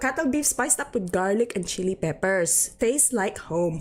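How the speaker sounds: bad, terrible put-on Filipino accent. Reading a corned beef label aloud in a terrible Filipino accent. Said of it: "That was some terrible Filipino accent".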